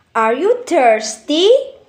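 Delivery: pitch rising upward on the word thirsty. Teaching intonation types, the speaker gives a yes-no question example with rising intonation. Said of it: "For example".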